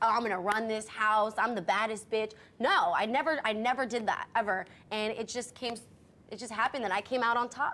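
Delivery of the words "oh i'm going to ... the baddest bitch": ordinary talk, nothing marked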